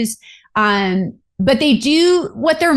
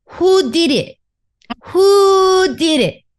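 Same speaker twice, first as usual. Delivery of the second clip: put-on high, slow young child's lisp, who stretched; 6 semitones higher than usual. Retelling a five-year-old's reaction to rocks: imitating a young child's lisp. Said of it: "in his little younger child lisp".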